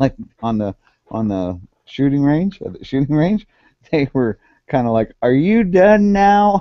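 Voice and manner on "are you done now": very high, slow fake Southern drawl. Retelling what two shooters down the lane asked, in a fake southern accent. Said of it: "they didn't have a southern accent, but it makes it sound funnier".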